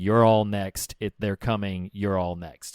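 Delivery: ordinary delivery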